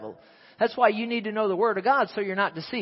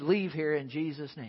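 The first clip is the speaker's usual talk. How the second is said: quiet muttering under breath, lower and quieter; 4 semitones lower, 8 dB quieter than usual. Retelling binding a demon in a nursing home: muttering under breath. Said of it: "I just said that under my breath".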